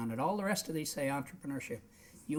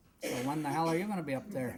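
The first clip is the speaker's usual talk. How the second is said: ordinary delivery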